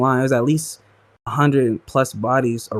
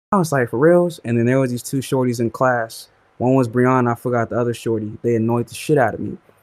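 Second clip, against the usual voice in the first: ordinary talk, nothing marked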